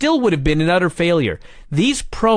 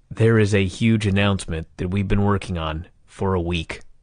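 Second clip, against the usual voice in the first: very low, flat, dead-level monotone drone; 10 semitones lower, 3 dB quieter than usual. Retelling a wrestling TV announcement, doing a Jim Crockett monotone impression. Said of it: "in his boring-ass monotone manner".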